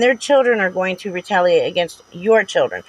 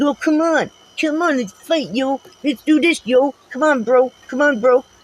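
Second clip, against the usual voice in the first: goading, pitched-up, come-at-me taunting tone; 6 semitones higher than usual. Imitating the person addressed yelling back to pick a fight: imitating someone yelling to fight. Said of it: "act like you and start screaming obscenities back and start yelling".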